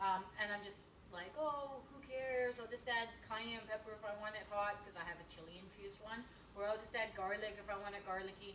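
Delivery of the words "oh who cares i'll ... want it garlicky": ordinary delivery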